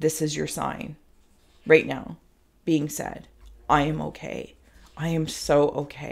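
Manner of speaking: warm, kind, compassionate and confident tone. Giving the viewer the sign they asked for: compassionate and confident. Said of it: "compassionately and confidently".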